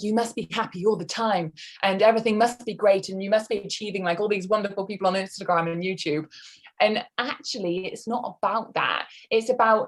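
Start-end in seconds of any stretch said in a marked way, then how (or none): none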